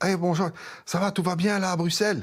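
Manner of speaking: put-on French words in an American accent. Acting out a man answering a phone call from visitors at the Los Angeles airport, put-on American accent. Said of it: "avec son accent américain".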